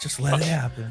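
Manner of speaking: soft, hushed half-whisper. Joking about a friend lying beside his sleeping partner: imitating a half-whisper. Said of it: "He whispers in her ear".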